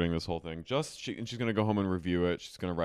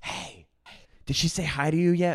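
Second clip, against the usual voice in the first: stage whisper, pitched high; 10 semitones higher, 5 dB louder than usual. Retelling how one woman asked another about a guest, in a stage whisper. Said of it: "in a theater whisper, a stage whisper".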